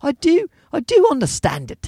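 poor put-on British accent. Quoting a British teacher who was asked if she understood: bad British accent. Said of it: "I got to work on my British accent".

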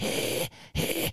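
soft, whispered, breathless gasp. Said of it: "You're like".

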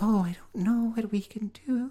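put-on very high little-girl baby voice. Retelling a film's actress playing a baby-girl character: imitating a baby-girl voice. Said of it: "baby girl kind of a character".

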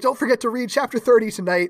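loud shouting. Retelling how a teacher yelled over students packing up: imitating a teacher yelling. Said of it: "yelling over them".

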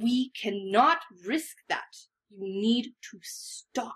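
furious, seething angry-mom voice under the breath. Telling him he needs to stop: seething angry-mom voice under breath. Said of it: "in like the most angry mom voice under your breath".

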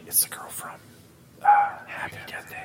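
secretive, hushed whisper, barely audible, very quiet. Retelling what someone said during a movie: imitating someone whispering. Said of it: "Why are you whispering?".

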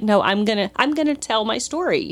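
usual speaking voice

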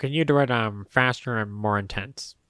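plain, matter-of-fact delivery. Imitating a director giving actors a note: imitating George Lucas directing. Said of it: "you do it like George Lucas and go".

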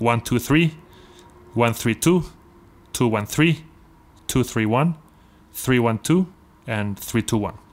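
slow, careful, deliberate, one-by-one delivery. Explaining permutations to a listener, the speaker says the orders slowly. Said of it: "I'll just say them slowly".

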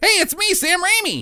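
very high-pitched voice. Retelling a movie scene as an imagined quote: imitating Sam Raimi. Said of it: "And Sam Raimi's like".

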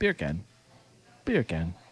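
put-on Jamaican accent. Urged by others to try it, saying a phrase in a jamaican accent. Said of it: "Go ahead and try it".

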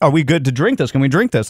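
ordinary talk, nothing marked

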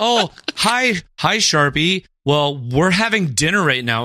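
passive-aggressive politeness. Greeting someone during dinner, in a Midwestern passive-aggressive tone. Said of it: "you would say it in a very Midwestern passive aggressive tone".

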